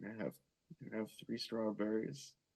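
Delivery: very quiet, grudging, reluctant giving-in tone. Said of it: "very reluctantly".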